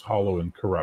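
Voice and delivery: ordinary talk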